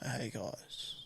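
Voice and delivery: barely audible, flat, lifeless whispered monotone. Acting out greeting listeners while feeling ill, mock monotone. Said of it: "I'm going to be so monotone".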